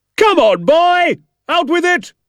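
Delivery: very high, shrill, slow, barking drill-ground yell. A man demands an answer from the boy narrator; shouting at the boy. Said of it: "He was shouting at me".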